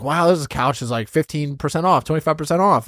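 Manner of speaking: ordinary delivery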